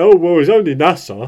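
loud, put-on dopey, dimwitted voice. Imitating the other speaker's argument: generic "I am stupid" voice. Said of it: "impersonates me with generic "I am stupid" voice".

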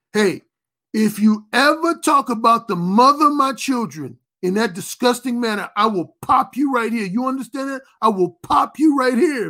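put-on angry, threatening tone. Retelling a film scene where a character threatens another: imitating De Niro angry. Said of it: "real angry".

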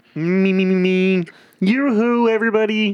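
very high puppet voice, every word drawn out. Asked by another speaker to talk like Kermit: Kermit the Frog voice. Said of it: "Say you like in Kermit".

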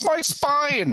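piercing, very high-pitched shriek. Voicing a bodyguard crushed under an elbow slam: screaming. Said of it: "the bodyguard screams".

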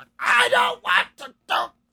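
very loud, shrill, furious angry yell. Recounting an upset Make-A-Wish kid, imitating an angry Karen yell. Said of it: "that like angry Karen yell where he was like".

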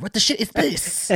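put-on British accent at very high pitch. Joking that Ridley Scott wants nothing to do with AVP, in his British accent. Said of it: "He's British".

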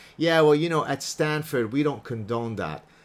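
plain

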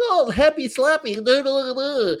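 put-on very high cooing baby talk babble. Describing how not to act, the speaker slips into baby talk. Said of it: "baby talk".

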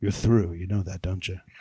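hushed, very quiet, low-pitched delivery. Retelling what the owner of Nappy Cuts said after applause, retelling a very quiet line. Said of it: "very quietly says".

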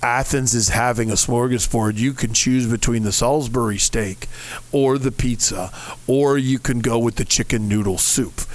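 deep, bored, flat droning monotone. Showing how the lunch menu got read out, in a flat monotone. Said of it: "I just monotone just read it".

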